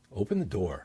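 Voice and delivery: downward inflection ending on "door". Demonstrating a command in a lesson on inflection, falling pitch on door. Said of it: "Downward inflection, that's a command".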